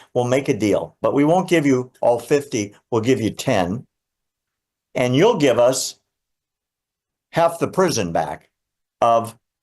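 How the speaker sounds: ordinary talk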